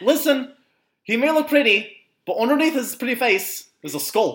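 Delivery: high, loud voice with a Newfoundland accent.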